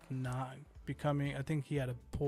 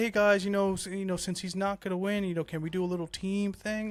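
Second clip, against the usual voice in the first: acted-out pleading, begging, cap-in-hand tone; 5 semitones higher, 6 dB louder than usual. Mocking a request George made to the others: imitating George pleading. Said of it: "you're pleading and you're begging".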